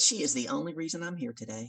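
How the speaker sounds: ordinary talk, nothing marked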